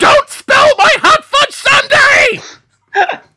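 very high, slow, loud yell.

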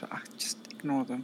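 low, soft whisper. Roleplaying a character, speaker whispers an aside to another character: whisper. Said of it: "She's gonna just going to whisper".

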